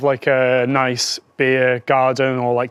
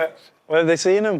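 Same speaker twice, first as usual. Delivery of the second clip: normal talking voice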